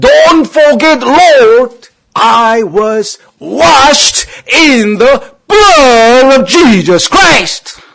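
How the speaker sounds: desperate, loud, high-pitched shout. Retelling how they cried out to the Lord, reenacting a loud shout. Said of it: "막 소리 꽉 치는 거야".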